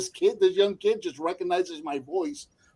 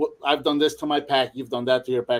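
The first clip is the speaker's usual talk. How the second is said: ordinary talk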